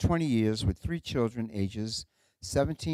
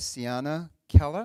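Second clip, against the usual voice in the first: New England accent, no R in Keller; 4 semitones higher, 4 dB louder than usual. Introducing the last speaker of the day, New England accent. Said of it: "that's my New England accent".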